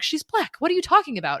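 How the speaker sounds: mock appalled reaction. Retelling the family's reaction to the father's daughter: imitating an appalled family. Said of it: "The whole family is appalled".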